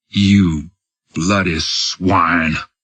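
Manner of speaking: very slow, distinct, each word spaced out. Reading a story aloud, the narrator voices a glaring general, very slow and distinct. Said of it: "said very slowly and distinctly".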